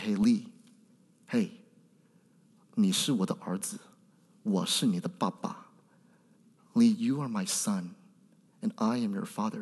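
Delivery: quiet, soft, very slow, spoken up close. Retelling words said to a son held close: retelling speaking softly. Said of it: "I'll softly say to him".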